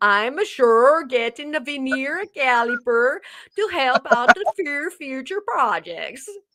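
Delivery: singsong, put-on cartoon Swedish cook accent. Repeating a line after being asked to, in Swedish Chef voice. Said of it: "like the Swedish Chef".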